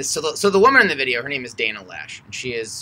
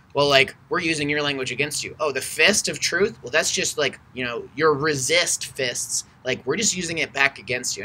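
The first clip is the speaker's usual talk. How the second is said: usual speaking voice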